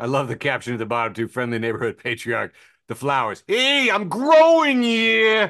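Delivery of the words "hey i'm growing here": Italian-American accent. Riffing on a photo caption with co-hosts, doing a put-on Italian-American accent. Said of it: "I knew you guys could do the accents better".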